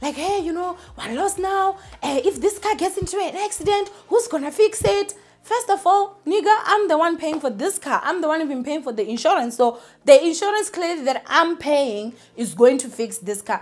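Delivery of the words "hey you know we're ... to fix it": high, worked-up, angry shouting rant. Retelling a mother in the car complaining about being lost: imitating someone shouting. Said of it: "busy shouting and yelling".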